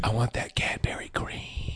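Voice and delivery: low, slow whispering.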